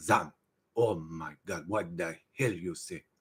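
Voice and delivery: put-on heavy Brazilian accent, very low and very quiet. Retelling how a man with a heavy accent repeated the speaker's phrase: retold brazilian accent. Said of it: "he'd do it in his Brazil accent".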